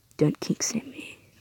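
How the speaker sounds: slow, soft, weird whispery voice.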